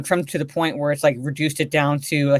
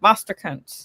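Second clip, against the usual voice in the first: poor put-on British accent, slightly higher pitch; 5 semitones higher than usual. Imitating Alfred greeting Superman: attempted British accent as Alfred. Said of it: "I can't do a British accent".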